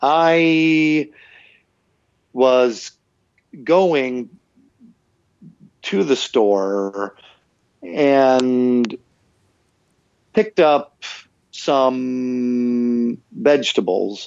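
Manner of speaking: very slow, painstaking, halting speech, word by word. Imitating an english teacher obsessed with being perfect, speaking very slowly. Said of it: "he would speak very slowly".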